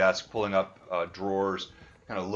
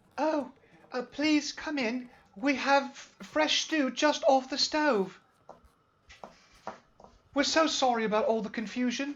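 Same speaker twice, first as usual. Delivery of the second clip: feminine voice pitched very high. Running a game, the speaker voices someone inviting the players in, feminine voice. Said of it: "you hear a feminine voice".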